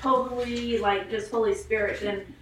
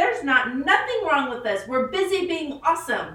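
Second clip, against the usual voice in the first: play-acted, loud voice raised to fill the room; 5 semitones higher, 5 dB louder than usual. Recalling answering everybody while still working, retelling a raised voice. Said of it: "I just raised my voice and I said".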